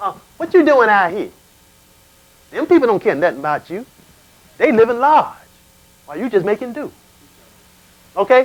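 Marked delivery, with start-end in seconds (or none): 0.4-6.9 wheedling, coaxing, tempting voice. Retelling plowing at night when a voice tempts him: tempting inner voice. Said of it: "here comes this voice".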